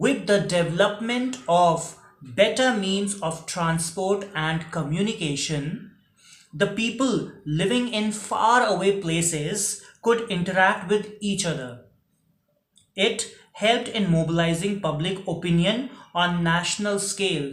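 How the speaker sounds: slow, deliberate, phrase-by-phrase dictating delivery. Dictating a chapter question's answer so listeners can write it down, in slow dictation. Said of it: "I'm speaking it slowly so that you can write it carefully".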